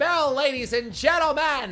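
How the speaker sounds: put-on very high, old-timey newspaper hawker calling out. Addressing an audience like a fifties guy in a news cap selling newspapers. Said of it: "That's more like fifties guy in a news cap trying to sell newspapers".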